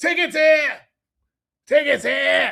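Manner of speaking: put-on very high, rough Boston accent. Recalling ticket scalpers outside Boston stadiums from childhood, Boston ticket scalper voice. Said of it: "the scalper voice for Boston accents".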